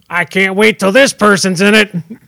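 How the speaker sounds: normal talking voice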